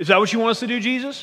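sassy. Retelling how the disciples questioned jesus: mock-sassy disciples. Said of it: "you can hear the sass in their voice".

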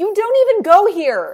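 high, loud, sassy, mocking delivery.

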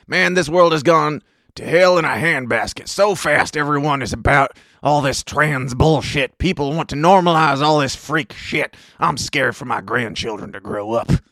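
put-on over-the-top, complaining, ranting old-timer voice. Retelling what a person said, in the speaker's most boomer voice. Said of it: "I'm going to say this in my my most boomer voice that I can".

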